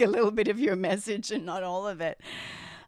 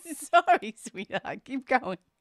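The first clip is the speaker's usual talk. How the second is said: speaking while laughing through the words; 4 semitones higher than usual. Apologizing to a co-host mid-show, laughing while talking. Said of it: "Why are you laughing?".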